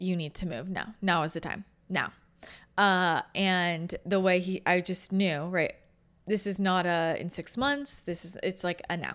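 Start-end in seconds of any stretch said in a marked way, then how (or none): 0.0-2.1 put-on calm, intense, forceful delivery, faster. Retelling what someone told him, imitating a calm, intense command. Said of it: "very calmly, very strongly, very intensely".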